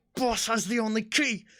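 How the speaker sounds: slow, very high grunt through clenched teeth. Voicing a furiously struggling character, grunting through gritted teeth. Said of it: "grunting what he says next through like gritted teeth".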